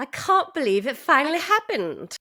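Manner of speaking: deliberately faked British accent. Asked to quote a bingo winner's reaction, the speaker uses a british accent. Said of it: "you have to do the British accent".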